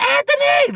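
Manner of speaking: put-on very high holler, very loud. Retelling a woman kicking in the door: imitating someone yelling loudly. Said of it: "Loud as hell".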